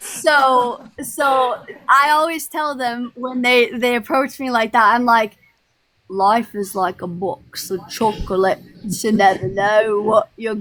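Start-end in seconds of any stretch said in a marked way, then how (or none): 6.1-10.5 imitation British accent, man's voice. Retelling the reply given to people who approach like that, in a british man accent. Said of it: "But you do it like a British man".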